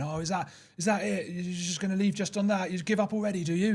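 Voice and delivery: play-acted high shout. Retelling how a tennis opponent shouted as the speaker walked off: imitating someone shouting. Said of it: "he's shouting after me going".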